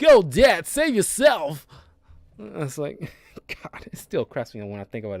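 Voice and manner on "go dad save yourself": very slow, very loud, high booming celebrity voice. Retelling how the actor playing Walken's son talked, in a Christopher Walken impression. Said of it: "so he does his Christopher Walken impression".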